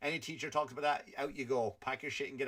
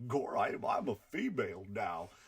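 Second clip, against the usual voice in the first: put-on cartoon dog voice, much lower; 4 semitones lower than usual. Acting out Disney characters in a bit about DeSantis, the speaker does Goofy voice. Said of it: "And Goofy like".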